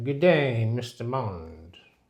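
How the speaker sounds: very low, slow villain voice. Imitating a public figure as a Bond villain behind a desk: Bond villain voice. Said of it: "he was sitting behind a desk with a cat".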